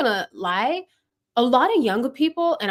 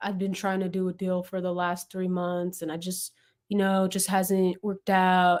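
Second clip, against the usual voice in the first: low, flat, dry, uncaring, couldn't-care-less drone; 5 semitones lower, 6 dB quieter than usual. Speaker mimics a seller describing a failed deal: mock-uncaring voice. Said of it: "You don't even sound like you care".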